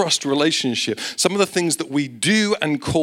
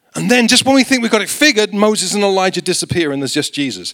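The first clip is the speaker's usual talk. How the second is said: ordinary talk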